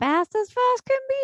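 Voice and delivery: very high, grating, annoying cartoon creature character voice. Recalling a tv performer's catchphrase, the speaker quotes it: imitating the jackalope voice. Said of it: "always do this voice".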